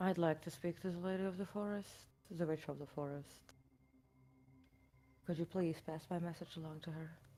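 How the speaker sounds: very quiet, hushed whisper. Speaking in character to a tree, asking for the Lady of the Forest: whispering to a tree. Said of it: "I'm going to whisper to it".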